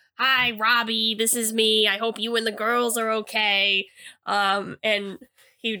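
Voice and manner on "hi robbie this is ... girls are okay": put-on heavy, thick Boston accent. Retelling a phone message a man left for the speaker, in a heavy Boston accent. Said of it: "he said in a heavy Boston accent".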